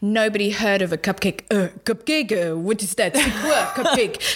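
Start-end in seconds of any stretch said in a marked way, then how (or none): 1.5-4.2 horrible, bad, put-on French accent. Recalling Paris years ago, when nobody had heard of a cupcake, horrible French accent.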